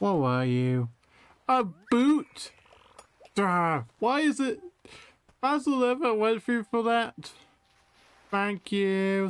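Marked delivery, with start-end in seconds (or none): 8.3-9.3 insincere, sarcastic tone. Reacting to catching an unwanted fish, giving sarcastic thanks.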